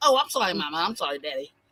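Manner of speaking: insincere, giggly, laughing through the words. Retelling a girl's apology to her parents: imitating a laughing, giggling apology. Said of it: "apologizes like that by laughing and giggling".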